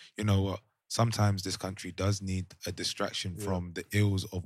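normal talking voice

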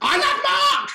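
shrill, high, top-of-the-lungs blurted shriek. Recounting a moment standing among some girls, re-enacting screaming it out. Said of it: "stood there and screamed".

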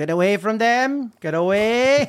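put-on slow Cork Irish accent, words drawn out. Quoting what his granddad used to say to him, in a Cork accent. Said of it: "That's my Cork accent".

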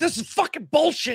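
put-on very high-pitched furious angry yell. Explaining why dogs get aggressive, acting out an owner: mock yelling at the TV. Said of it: "constantly screaming and yelling at your TV".

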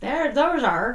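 Irish or Scottish-sounding accent. Correcting a word while talking about the Moores murders, in an Irish Scottish accent. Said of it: "Speaking with a like Irish Scottish accent".

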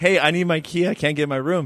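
ordinary talk, nothing marked

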